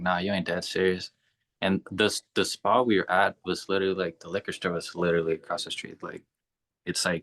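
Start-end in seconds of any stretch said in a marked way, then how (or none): none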